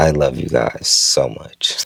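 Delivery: voice choking up. Speaker thanking their viewers at the end of a video: choked up, emotional. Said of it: "I'm choking up saying it".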